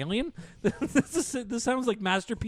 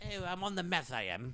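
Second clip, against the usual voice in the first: slow, heavily laid-on put-on British accent; 7 dB quieter than usual. Improvising a 911 call in a put-on british accent. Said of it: "Why is he British?".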